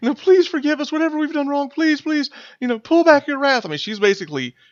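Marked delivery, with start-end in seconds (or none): 0.0-3.6 very high, tearful, pleading cry. Voicing a kneeling acolyte crying out to Umberly: crying out pleading. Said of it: "she's crying out to Umberly".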